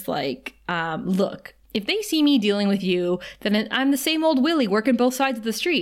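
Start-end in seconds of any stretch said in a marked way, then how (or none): none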